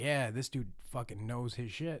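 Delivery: normal talking voice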